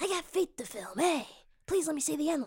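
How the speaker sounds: creepy, eerie put-on voice. Redoing the impression more accurately: Quentin Tarantino impression. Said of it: "Except it's more like".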